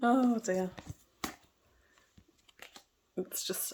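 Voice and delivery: slow, chuckling, laughing through words. Reading cards after warning about taking precautions, laughing while talking. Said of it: "I shouldn't particularly laugh".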